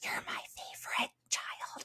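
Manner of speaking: barely voiced, breathy, very quiet hushed whisper. Retelling a mother whispering in her closet: imitating a whisper. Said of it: "she's whispering to me".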